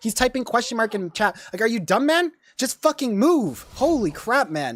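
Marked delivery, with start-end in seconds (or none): 1.6-4.8 annoyed, angry outburst, swooping and drawn-out. Ranting about a teammate who keeps pinging: angry. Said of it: "I'm getting more angry the more I think about it".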